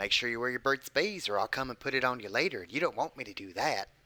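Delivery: put-on creepy voice. Doing a Burt's Bees ad bit, saying something in a creepy voice. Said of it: "I'll say something creepy like".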